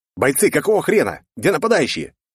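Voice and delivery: high, barking military commander voice. Narrator finds soldiers staring at their phones during an attack, barking like a battalion commander. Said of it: "рявкнул на манер комбата".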